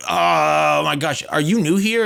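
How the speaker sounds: loud shout, stretched "oh". Retelling a woman's reply when asked if she paid; retelling a woman shouting. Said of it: "The only reason she shouted and said that".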